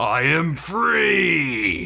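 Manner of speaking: grand, theatrical, proclaiming voice. A game master describes a voice from a broken urn, booming voice. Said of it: "this booming voice say".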